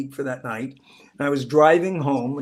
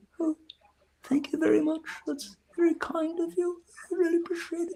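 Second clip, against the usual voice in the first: put-on very quiet, very high British accent; 6 dB quieter than usual. Retelling how an actress from Pearl replied to praise, in a very quiet British voice. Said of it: "She has this very British and very quiet, very quiet voice".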